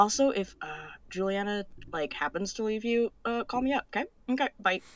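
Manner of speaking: secretive, low, very soft half-whisper. A character runs back and speaks into another's ear unheard by others, half-whispering. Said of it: "she whispers in her ear and says".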